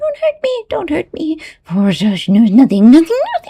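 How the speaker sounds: very high, shrill, terrified goblin voice. Narrator reading a story, voicing the goblin answering Trusty: terrified goblin voice. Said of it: "terrified goblin".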